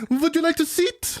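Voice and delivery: put-on very strong German accent, high-pitched and slow. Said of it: "very German Hitler".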